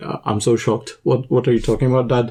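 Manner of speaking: plain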